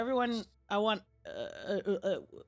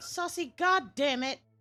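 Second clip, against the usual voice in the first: shouting, higher; 6 semitones higher, 3 dB louder than usual. Calling to a player who wandered off: yelling. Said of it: "Quit yelling at me".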